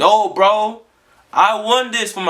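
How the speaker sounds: play-acted protesting. Retelling arguing back with a girl's parents in an arcade; retelling an argument. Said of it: "I'm arguing back and forth in the arcade".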